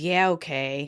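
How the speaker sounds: put-on deflated, resigned, dejected, downcast tone. Retelling a TV scene, quoting Joey told he cannot eat: imitating a dejected reply. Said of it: "Joey dejectedly says".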